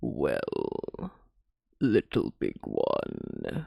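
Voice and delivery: deep, hushed, creaky, fully in vocal fry. Showing another speaker how the Wahila voice goes, Wahila voice, deep vocal fry. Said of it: "all the way down in my vocal fry to do this voice".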